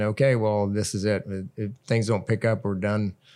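usual speaking voice

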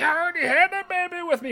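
loud, very high, eerie creepy laughing voice. Retelling a movie scene, quoting the woman: imitating a creepy laughing voice. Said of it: "with this creepy laughing sound".

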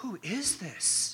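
awed, wondering tone. Reading a question from a city in turmoil, the way they hear it: awed. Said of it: "I tend to hear that question with the voice of awe".

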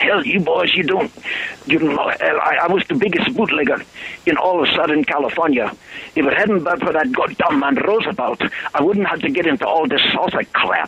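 put-on Polish accent. Retelling what a former bootlegger told him and the other boys: Polish accent. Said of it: "I won't comment on the quality of your Polish accent".

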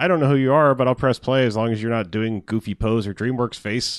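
ordinary delivery

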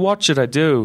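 put-on thick, laid-on American accent. Imitating an actor's line in the film: imitating heavy american accent. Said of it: "he's got, like, a heavy American accent".

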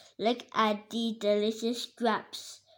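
ordinary delivery, nothing marked

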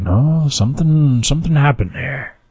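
put-on high-pitched, batty crazy old codger voice. Retelling what a man said about a destroyed school, in a crazy old man voice. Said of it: "your generic crazy old man right. voice".

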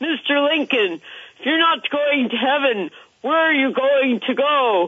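booming, resounding, high preacher voice. Retelling a preacher addressing a man in the congregation, in a booming voice. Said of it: "in his booming voice".

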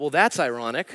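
put-on loving, sarcastic tone. Retelling a wife's reply on the phone: imitating a loving, sarcastic remark. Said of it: "tinged with love and sarcasm".

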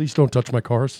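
angry, upset delivery. Imagining the Tesla maker seeing his cars modified: imitating angry Elon Musk. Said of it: "Elon would be so angry".

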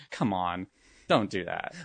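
put-on exasperated, fed-up, eye-roll tone. Acting out own reaction to a film scene: imitating exasperated eye-roll tone. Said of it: "eye rolling and thinking".

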